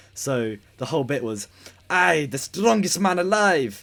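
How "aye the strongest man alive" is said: loud, poor, put-on French accent. Retelling someone's catchphrase bit, admitting no skill at accents: bad French accent. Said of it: "he gave him a French accent".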